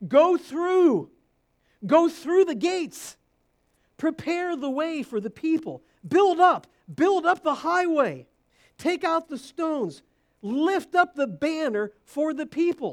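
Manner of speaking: loud, ringing, thrilled, excited, prophet-like delivery. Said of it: "you can almost hear the excitement".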